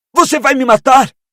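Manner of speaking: very high, strangled, suffocating choke. Reading a scene aloud, voicing Harry being strangled: choking, strangled voice. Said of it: "perguntou Harry sufocado".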